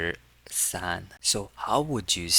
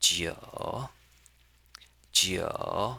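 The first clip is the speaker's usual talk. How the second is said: jiu said with dipping Mandarin third tone. Showing how to pronounce the Chinese number nine: Mandarin third tone on jiu. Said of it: "That is the third tone".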